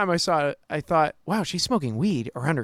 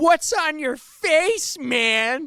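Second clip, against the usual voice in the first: pitched way up and stretched; 12 semitones higher than usual. Speaker acts out calling out a man he has noticed, in a Tommy Boy impression. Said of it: "I don't sound like Tommy Boy when I do it".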